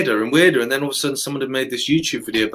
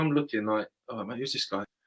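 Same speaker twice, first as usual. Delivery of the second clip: plain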